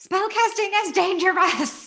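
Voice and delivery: piercing, shrill, high-pitched shout. During a tabletop game, as a player rolls the dice: yelling. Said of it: "and I'm gonna yell".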